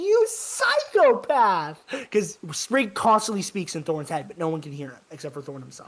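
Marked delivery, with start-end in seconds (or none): 0.0-1.8 high, swooping shrieked yell. Describing a game's voice actor, imitating Sprig's voice. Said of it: "That is Sprig's voice actor".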